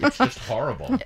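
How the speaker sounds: high voice, words laughed through. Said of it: "I'm sorry I'm laughing".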